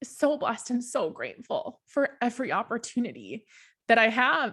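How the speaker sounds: heartfelt, overcome with emotion, voice swooping. A speaker goes on after promising not to get emotional, getting emotional. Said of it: "And sorry".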